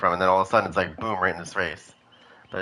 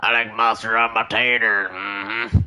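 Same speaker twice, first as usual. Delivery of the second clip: very slow, drawn-out put-on creature voice; 3 semitones higher, 3 dB louder than usual. Giving a figure in the game an imagined voice. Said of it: "I think that's what he would sound like".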